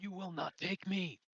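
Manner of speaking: furious, roaring, enraged bellow, pitched high. Narrating a scene and voicing a bellowing character: enraged bellowing. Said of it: "You hear me bellowing".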